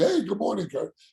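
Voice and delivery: cheerful, chirpy, all happy tone. Retelling how teammates who left greeted him at the office, mock-happy greeting. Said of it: "waving at me all happy".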